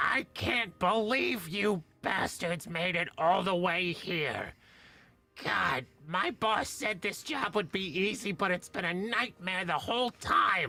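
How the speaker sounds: talking raven creature voice. Voicing a raven that confronts the players: raven voice. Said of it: "The raven says".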